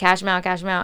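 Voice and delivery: ordinary delivery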